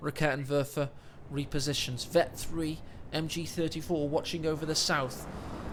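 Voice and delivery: soft, low, hushed commentary voice.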